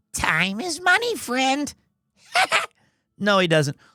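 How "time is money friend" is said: high, slow fantasy goblin voice. Describing a character who talks like a WoW goblin, then voicing him: WoW goblin voice. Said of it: "He talks like a WoW goblin".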